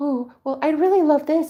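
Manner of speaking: bashful, meek, timid, shy voice. Imitating how most people ask timidly, not with their chest: mock-timid voice. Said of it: "We just timidly, shy".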